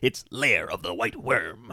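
deep, hushed late-night male announcer voice. Joking about a late night tv special, in a deep announcer man voice. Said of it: "that deep, like, announcer man voice".

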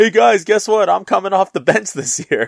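put-on very high, playful, joking delivery. Retelling how a player made a joke about coming off the bench, imitating someone speaking jokingly. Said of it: "jokingly was like".

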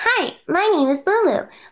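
very high-pitched cartoon character voice. Voice actor recalls pitching a character for a younger audience, higher-pitched Lulu voice. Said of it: "I pitched her in a higher pitch".

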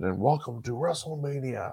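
put-on quiet, raspy old man voice. Recalling Vince welcoming everybody back to WrestleMania, in a raspy old man Vince impression. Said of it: "in his kind of raspy old man voice".

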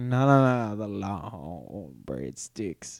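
very slow, low, sexual-sounding, suggestive drawl. Retelling a video where a guy called Domino's doing an impression: imitating his impression. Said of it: "I can't do it as well as he did".

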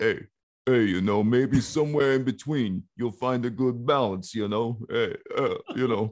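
dopey, simple-minded, dumb-sounding simplistic delivery. Describing a movie scene, doing a simplistic Sylvester Stallone impression. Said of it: "That was a pretty good impression".

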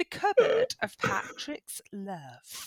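breathy, whispered, half-tried, Americanized British accent. Repeating a phrase another speaker just said, in an Americanized British accent. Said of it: "were you trying to do it in an Americanized British accent?".

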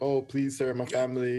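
mock begging, pleading tone. Imitating people in chat rooms begging for airdrops: imitating someone begging.

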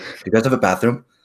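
mock desperate, frantic, urgent delivery. Retelling a work shift, quoting a man who came in asking, imitating a frantic man. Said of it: "He like came in like really like frantically".

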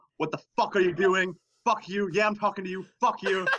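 imitated screaming. Speaker recounts a man suddenly screaming at them by the coolers, retelling someone screaming. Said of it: "he just starts screaming".

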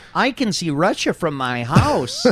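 slow, mocking delivery. Two speakers chatting about Wasilla, Alaska; a mocking Sarah Palin impression. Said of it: "Stop mocking her".

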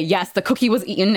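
normal talking voice

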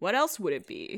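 silky, smooth, seductive, nonchalant, sexy voice. Retelling a movie scene where the grandfather answers his granddaughter: imitating Gramps's sexy voice. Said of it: "In his sexy voice".

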